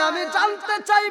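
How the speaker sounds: furious cry, high-pitched and loud.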